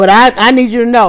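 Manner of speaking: ordinary talk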